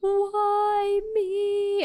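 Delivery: mock very high, hysterical crying and sobbing wail. Retelling getting bad news walking down Eighth Avenue: retelling hysterical crying. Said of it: "hysterically crying".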